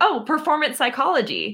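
proud, confident, acted-out tone. Retelling your answer to a man's question: retelling a proud answer. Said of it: "And proudly".

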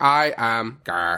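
robotic voice. Introducing oneself on the podcast as the robot: robot voice. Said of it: "the robot Gar".

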